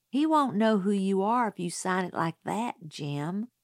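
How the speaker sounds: plain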